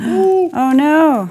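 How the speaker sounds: shrill, sharp, high, startled gasp of dismay. Cutting a tape line, the speaker makes a slip, gasping.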